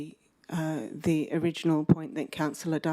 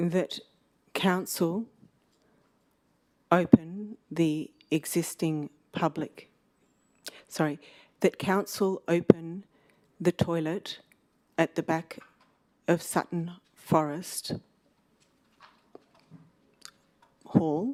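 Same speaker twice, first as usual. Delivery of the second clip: slow, unhurried delivery. Councillor dictating the wording of an amendment at a council meeting, speaking slowly. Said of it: "I'll say it slowly".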